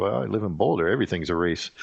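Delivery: ordinary delivery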